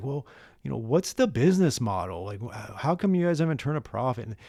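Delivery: put-on, condescending, patronizing talking-down voice. Retelling how an interviewer questioned the lack of profit: imitating a condescending question. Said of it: "kinda condescendingly asked".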